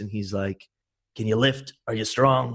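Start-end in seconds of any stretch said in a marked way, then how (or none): 1.2-2.6 rough, harsh, super rugged voice. Retelling a phone call from an oil rig tool push: imitating Guy's super rugged, harsh voice. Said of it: "this, like, super rugged, harsh voice".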